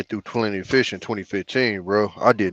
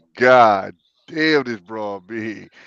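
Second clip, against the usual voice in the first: usual speaking voice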